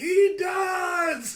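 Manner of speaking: put-on shrill, very loud, high, drawn-out drunken yell. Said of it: "drunk as hell".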